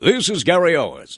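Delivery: high, booming announcer voice. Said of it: "it was my announcer".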